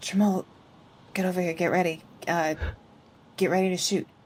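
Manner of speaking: voice kept down. Calling quietly to Jamal from cover to get ready to shoot: keeping voice down. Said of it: "I love that you're still whispering".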